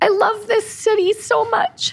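very high, teary voice breaking while crying. Podcast host moved that others understood the village's history: crying. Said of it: "The first cry in the podcast".

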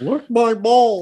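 very high, shrill, loud, clumsy put-on voice. Joking with the others, doing a bad Jeff impression. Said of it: "That's not a good Jeff impression".

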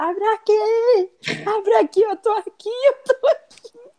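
frantic, desperate, very high shout, "aqui" drawn out. Telling a story about a woman stuck behind a door, retelling her desperate shout.

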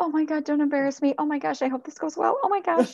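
put-on very high anxious nervous fretting. Acting out a pet owner at a dog's evaluation: imitating a nervous pet parent. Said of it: "you as the pet parent are probably sitting there extremely nervous".

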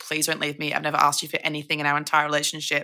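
tearful, crying, begging voice. Retelling begging an ex-boyfriend not to leave: retelling a crying plea. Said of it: "crying, holding onto his shirt, being like".

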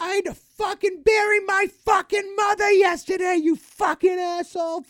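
very high, shrill, enraged screaming. Retelling how a woman screamed at a man, retelling a scream. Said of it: "This woman is just screaming at him".

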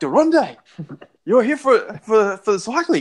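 put-on excited male voice. Recounting how a man reacted on learning the speaker came for the cycling, imitating an excited man. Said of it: "he's just like so excited".

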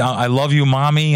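ordinary talk, nothing marked

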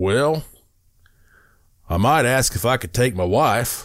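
put-on drawling Texas accent. Retelling a man's answer to an offer to go to space, in Jim's Texas drawl. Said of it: "with that Texas drawl".

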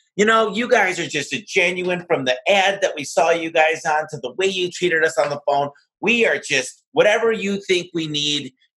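mock delighted customer voice. Recalling what customers told him on meeting the team, imitating happy customers. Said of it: "they'd be so happy".

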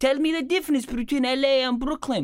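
put-on high, demanding voice with an Australian-ish accent. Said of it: "She goes".

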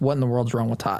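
usual speaking voice

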